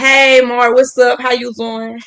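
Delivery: Atlanta way of talking. Showing how you might have greeted Mark when you first met, in an Atlanta way of talking. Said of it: "I'll start talking like this".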